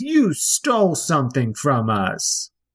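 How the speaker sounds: put-on child's voice. Voicing a Kenku that confronts a player: kid's voice. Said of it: "it says again in that kid's voice".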